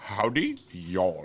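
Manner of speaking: put-on over-the-top Indian accent. Retelling a man living his american cowboy dream, greeting in a crazy indian accent. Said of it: "he had the crazy Indian accent".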